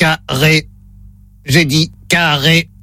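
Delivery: low, flat, level, mechanical robot voice. During a staged word test, speaker voices the robot in a robot voice. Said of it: "Voix de robot enclenchée".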